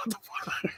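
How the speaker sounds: stunned, disbelieving whisper. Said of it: "I'm like".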